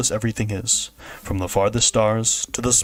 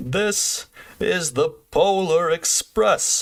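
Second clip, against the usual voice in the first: very slow speech, each word drawn out; 8 semitones higher than usual. Showing the Polar Express conductor's voice after praising it: bad Polar Express conductor impression. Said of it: "That was not a good impression".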